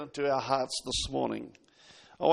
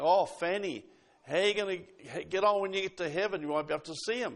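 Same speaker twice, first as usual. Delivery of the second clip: scornful, jeering, mocking and taunting tone; 4 semitones higher than usual. Retelling how someone taunted a blind woman, imitating someone mocking. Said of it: "somebody mocking and saying".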